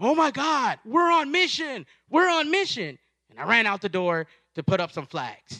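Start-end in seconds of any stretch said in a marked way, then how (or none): 0.0-3.0 mock, very high, frantic, excited screaming. Retelling seeing the new mission signs go up: retelling own scream. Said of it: "I started screaming".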